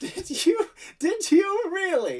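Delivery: very high, laughter-filled talk. Narrating a scene, voice Dame Sheila laughing from behind the listener as she speaks. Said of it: "you hear a peal of laughter from behind you as Dame Sheila says".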